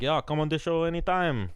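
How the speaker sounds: put-on Jamaican accent. Retelling what a fighter said when invited on the show: imitating a Jamaican accent. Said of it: "That was a Jamaican accent".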